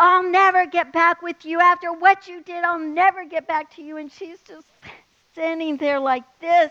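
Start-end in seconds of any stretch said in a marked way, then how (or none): 0.0-4.0 loud mock hollering, a screaming outburst. Retelling what he screamed at her on the street: imitating someone screaming. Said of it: "he's screaming at her".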